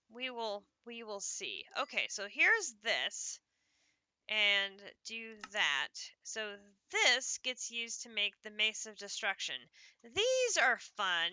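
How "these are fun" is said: dry, plainly sarcastic mock enthusiasm. Gathering items to craft the Mace of Destruction: sarcastic. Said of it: "I say sarcastically".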